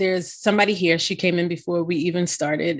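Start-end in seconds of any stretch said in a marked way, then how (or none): none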